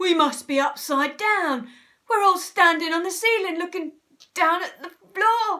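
gasping. Narrator reading a man's line in a story: gasped. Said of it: "gasped Mr. Twit".

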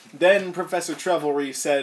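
usual speaking voice

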